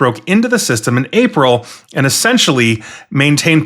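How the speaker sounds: ordinary delivery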